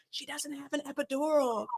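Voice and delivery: very quiet, slow, hushed, confidential half-whisper. Retelling a nurse half-whispering to the doctor during a birth: imitating a half-whisper. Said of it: "tries to whisper to the doctor".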